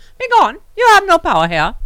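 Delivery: very high, booming, swooping sing-song witch voice. Answering nuisance phone callers just to hang up, in a Glinda the good witch voice. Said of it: "I don't know why I have that accent".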